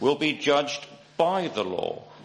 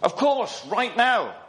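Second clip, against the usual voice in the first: barked delivery, pitched up; 9 semitones higher than usual. A colonel answers a rattled soldier's question; barked. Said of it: "barked the colonel".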